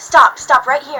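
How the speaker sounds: mock-screamed, reenacted scream. Retelling yelling at a bus driver who could barely hear, retelling screaming stop. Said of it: "I'm screaming at him to stop".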